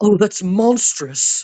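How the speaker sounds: high, put-on posh English accent. Quoting an actress's line from a film: imitating Anne Hathaway's English accent. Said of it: "weirdly has, like, an English accent".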